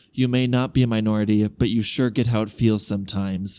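ordinary talk, nothing marked

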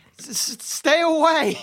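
dazed, shaken, high shell-shocked yell. A human not covered in gore yells at the approaching party: shell-shocked yell. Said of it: "In a very shell-shocked voice".

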